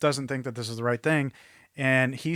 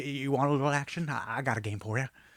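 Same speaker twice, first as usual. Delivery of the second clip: put-on stuttering rural voice; 6 dB quieter than usual. Retelling a movie bar scene: imitating a redneck stutterer. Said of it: "billed as redneck stutterer".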